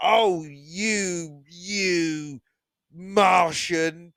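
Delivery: put-on loud, scornful, contemptuous kid voice, "you" drawn out. Quoting a kid in a favorite bit getting angry at the martian, imitating prejudiced scorn. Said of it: "the way he says Martian is like, you can tell there's prejudice".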